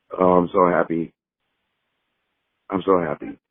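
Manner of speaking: slow, a little emotional, slightly overcome with feeling. Signing off to the guys before the show, a little emotional. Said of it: "Caesar sounding a little emotional there".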